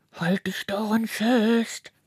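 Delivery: sounding muffled, dampened voice. Reading a story aloud, the snail calls down from high above, muffled voice. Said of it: "ertönt Carlas gedämpfte Stimme".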